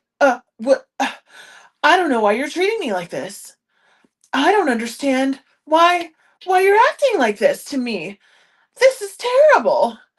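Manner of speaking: mocking wealthy person voice. Retelling how super wealthy people react to pushback: imitating a super wealthy person. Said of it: "they're like".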